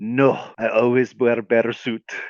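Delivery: put-on heavy European accent, strongly laid on. Retelling a story, voicing the woman in the bear suit with a thick European accent. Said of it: "she says in a thick European accent".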